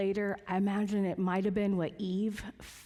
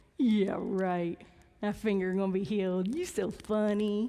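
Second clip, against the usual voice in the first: put-on cocky, scoffing, mocking voice. Retelling a reaction to hearing a finger would heal: imitating own cocky scoffing. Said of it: "I'm back to being cocky now".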